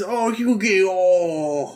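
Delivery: put-on old-man voice. A viewer quotes Solomon calling out to Yugi, imitating Solomon's old-man voice. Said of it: "him old manning all over the place".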